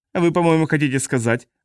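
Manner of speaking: ordinary delivery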